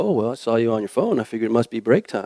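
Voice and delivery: mock smug, soft, sing-song sarcastic tone. Speaker retelling a hired young man's reply to their friend, imitating a smug sarcastic reply. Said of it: "very smugly, sarcastically said".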